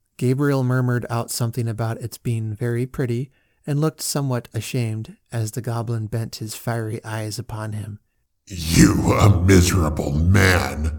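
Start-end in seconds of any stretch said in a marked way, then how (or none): 8.5-11.0 very slow, deep, loud contempt, "man" stretched out. The goblin turns on Gabriel Grubb, speaking with excessive contempt. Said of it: "said the goblin in a tone of excessive contempt".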